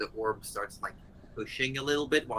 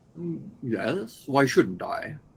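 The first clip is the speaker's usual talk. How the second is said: very slow, unhurried creature voice. Answering the wizard from inside the orb: voicing the face in the orb. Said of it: "are you all right there in that orb?".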